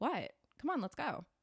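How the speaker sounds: casual, offhand tone. Retelling a boyfriend's line after a beating: imitating a casual, offhand tone. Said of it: "totally normalizing what he just did".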